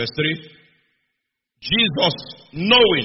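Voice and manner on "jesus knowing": knowing stressed, slow and loud. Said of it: "underline knowing".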